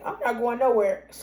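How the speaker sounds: easygoing, calm voice with a laugh. Retelling own reply to a yelling man: retelling own calm laughing reply. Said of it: "calm, laughing".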